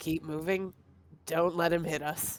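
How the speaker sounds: whispering in character voice. Speaking in character to an ally during combat: whispering in character. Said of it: "I wanna whisper to, to Al".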